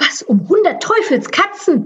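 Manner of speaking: high, swooping exclamation hissed through the teeth. Grier reacts as the mouse leaps into the toolbox, hissing. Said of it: "zischte sie".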